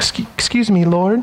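hesitant, halting, awkward, stumbling way of speaking. Imagining speaking up to the Lord in the moment: awkward Martha voice. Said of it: "how awkward it was for her".

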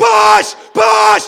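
loud, high-pitched shout.

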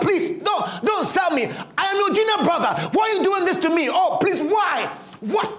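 repeated, desperate, begging tone. Imagining Joseph as he is sold by his brothers: acting out pleading for dear life. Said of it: "pleading for dear life".

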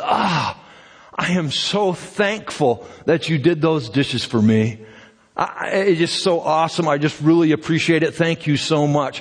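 put-on, oozing, gushing grateful tone. Acting out a tired mom thanking her child for the dishes: imitating a mom oozing thankfulness. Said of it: "she just oozes with thankfulness".

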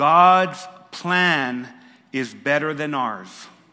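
very slow, clear, deliberate enunciation, each word drawn out. Addressing a shy audience, delivering point number two very slow and clear. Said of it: "I am going to say this slow and clear".

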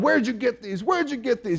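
high-pitched, interrogating, grilling dad voice. Retelling a commercial dad questioning his son about cigarettes: imitating grilling. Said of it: "grilling his son".

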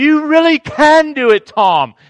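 mock high-pitched forceful yell. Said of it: "she was forceful with that".

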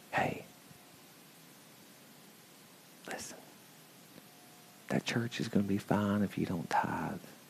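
hushed whisper, very quiet, barely audible. Voicing sin telling someone they need not tithe, whispered. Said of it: "So sin would sound like this. Sin would say, whispering".

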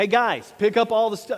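very loud, booming, authoritative male voice. Retelling ordering the guys to pick up all the stuff, retelling an authoritative male voice. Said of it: "that authoritative voice".

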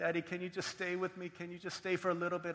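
put-on crying child voice. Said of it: "he cried like that".

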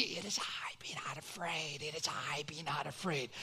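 very quiet, near-silent, mouthed-out words. Retelling a story, a mom on the front row prompting: imitating quiet mouthing. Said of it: "she's mouthing quietly".

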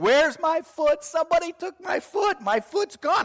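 put-on very high, loud, babyish screams of pain. Retelling lying on the ground with a broken ankle: imitating own past screaming. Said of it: "I started screaming".

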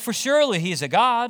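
play-acted, high, taunting, sarcastic, mocking jeer. Retelling a taunt to prophets shouting louder and louder: imitating Elijah's sarcastic mocking. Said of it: "He's mocking him at this point".

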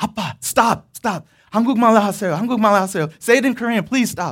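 high, urgent, begging pleading tone. Retelling the time of pleading with a father in a waiting room: imitating pleading with dad. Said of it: "Korean speaking and pleading".

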